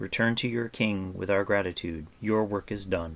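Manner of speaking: usual speaking voice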